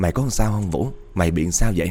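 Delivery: ordinary delivery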